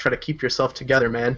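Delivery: soft, hushed murmur under the breath. A character in a game murmurs after an attack: murmuring under breath. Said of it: "murmur under my breath".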